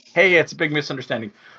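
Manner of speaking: ordinary delivery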